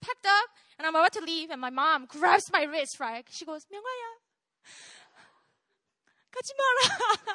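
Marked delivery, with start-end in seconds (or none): 3.7-7.4 put-on very high, tearful, sobbing voice. Recounting leaving home as his mom grabs his wrist: imitating mom crying her eyes out. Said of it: "She's like crying her eyes out".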